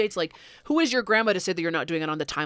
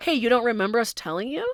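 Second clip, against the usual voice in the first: mock mean, needling, high taunting tone; 5 semitones higher than usual. Acting out a made-up reply to a grandma: pretending to be mean, taunting. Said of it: "that'd be so mean to play in the grandma's face".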